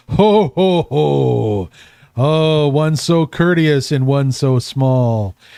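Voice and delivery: big, booming, rolling belly laugh, drawn-out ho. Game master voicing Marduk, surprised when a small player thanks him, with a big booming laugh. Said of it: "you hear this big booming laugh out of him".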